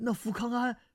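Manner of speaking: very high, quavering, trembling cry. Narrator reading a startled character's question, trembling voice. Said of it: "颤声道".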